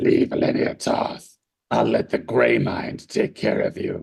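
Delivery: creaky, evil, sinister, scary villain voice. Voicing a voice in the players' heads: evil, scary voice. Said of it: "my evil, scary voice".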